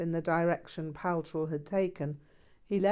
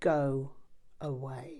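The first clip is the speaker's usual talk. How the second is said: icy, cold, chilling delivery; 4 semitones lower than usual. Reading a story where a furious teacher dismisses the narrator: icy voice. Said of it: "said in an icy voice".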